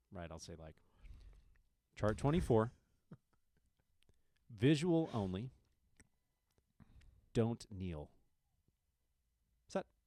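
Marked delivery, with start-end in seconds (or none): 1.9-9.8 measured delivery, each phrase set apart by pauses. Showing how they put more gaps in their words: clear gaps between phrases. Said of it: "I just put more gaps in my words".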